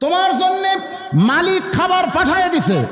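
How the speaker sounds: high, slow, drawn-out calling voice.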